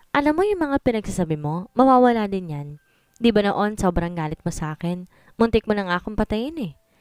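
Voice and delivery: ordinary talk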